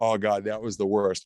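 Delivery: ordinary delivery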